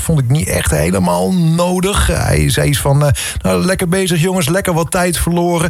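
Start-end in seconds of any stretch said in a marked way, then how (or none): 3.4-5.7 mocking, sarcastic, jabbing tone. Retelling a sarcastic remark he made over the on-board radio, mimicking a sarcastic remark. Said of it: "een sarcastische opmerking over de boordradio".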